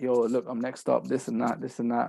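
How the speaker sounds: ordinary delivery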